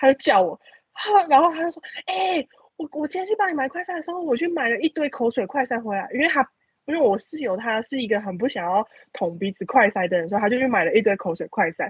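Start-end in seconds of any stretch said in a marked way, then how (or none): 2.1-6.1 put-on eager, bubbling, high, excited chatter. Retelling what the roommate excitedly said after buying tests: imitating someone speaking excitedly. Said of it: "他那一天回来就很兴奋地说".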